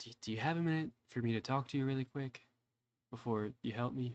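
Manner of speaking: close, private, hushed, leaned-in half-whisper. Voicing a character who leans in close to speak privately: half-whispering. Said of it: "he starts whispering".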